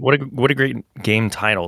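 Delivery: ordinary delivery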